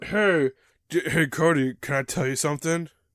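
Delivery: loud, belted cartoon gorilla character voice. Voicing Donkey Kong answering another speaker: Donkey Kong voice. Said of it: "Donkey Kong, what's up?".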